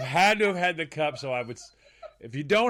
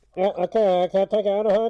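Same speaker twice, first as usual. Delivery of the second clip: loud, higher, fake drive-thru speaker voice. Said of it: "the whole change his voice".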